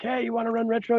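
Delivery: loud shout. Recounting filling an empty retro slot, the speaker re-enacts calling out to someone, retelling a yell. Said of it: "And so I yelled".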